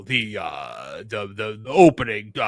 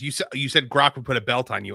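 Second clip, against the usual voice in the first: normal talking voice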